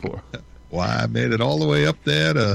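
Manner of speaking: put-on American Southern accent. Talking about a heat spell in new england, speaker slips into a put-on southern accent. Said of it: "that was a Southern accent".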